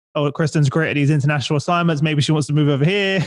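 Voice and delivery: ordinary talk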